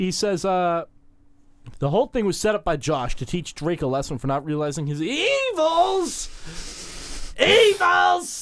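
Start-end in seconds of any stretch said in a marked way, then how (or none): 5.0-8.4 evils repeated twice with heavy stress. Recapping an episode's plot to a listener, the speaker puts stress on 'evils'. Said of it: "Emphasis on evils".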